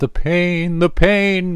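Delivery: high theatrical wail.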